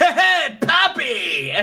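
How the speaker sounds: loud, high, swooping voice.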